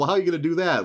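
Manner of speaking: squeaky put-on voice. Summarizing a story, quote a character's question in a squeaky voice. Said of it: "And squeaky voice, he's like".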